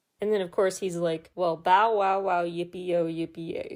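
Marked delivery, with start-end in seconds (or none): 1.3-3.8 imitated sarcastic tone. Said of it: "very sarcastically".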